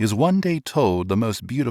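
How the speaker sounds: plain reading voice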